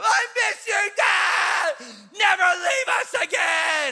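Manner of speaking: put-on very high, very slow, drawn-out shrill kid yelling. A father retelling what his kids shouted to him: imitating Sienna yelling. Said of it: "they're shouting and they're yelling and they're screaming".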